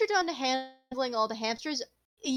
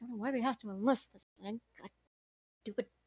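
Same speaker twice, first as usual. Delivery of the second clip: muttered grumbling under the breath, much quieter; 2 semitones lower, 6 dB quieter than usual. Narrating a game, the speaker voices a character stuck at a lock, grumbling under his breath. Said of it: "grumble under his breath".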